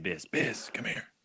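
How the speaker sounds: whispered, raspy, gravelly, hushed voice. Retelling how a man called the speaker over, imitating a gravelly voice. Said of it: "he has a kind of a gravelly voice".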